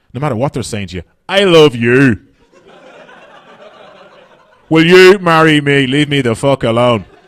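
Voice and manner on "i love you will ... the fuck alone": loud, very slow put-on scary Belfast accent. A comedian shows how anything sounds scary in Belfast, in a put-on Belfast accent. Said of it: "the Belfast accent".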